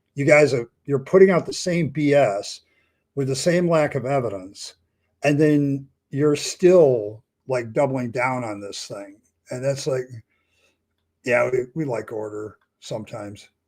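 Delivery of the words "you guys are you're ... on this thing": ordinary delivery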